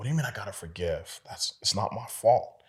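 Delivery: heated, angry, indignant yell. Recalling a drive, the speaker reenacts answering an inner voice, retelling an angry yell. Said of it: "I'm yelling".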